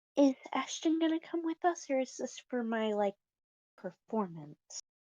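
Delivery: soft half-whisper under the breath. In a role-play game, a character speaks to Sky while sitting with Ashton, half-whispering very softly. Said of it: "speak under her breath and very soft".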